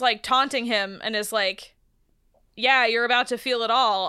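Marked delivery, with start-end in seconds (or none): none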